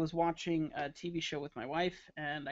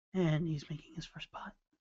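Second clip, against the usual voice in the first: golf commentator voice. Joking after thanking everyone for comments, the speaker slips into golf announcer voice. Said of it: "a golf golf announcer voice".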